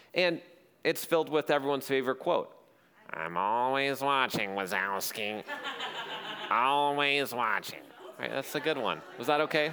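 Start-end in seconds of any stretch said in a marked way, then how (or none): 3.1-7.8 deep, low, slow, drawn-out monster voice. Summarizing an animated film, the speaker quotes a favourite line as a Roz impression. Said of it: "the only voice imitation I can actually do is Roz".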